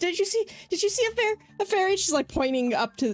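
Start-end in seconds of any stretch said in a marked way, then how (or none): 0.0-2.0 tearful, distressed, pleading voice. Voicing a character asking people about a fairy, tearful and distressed. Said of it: "with tears in her eyes".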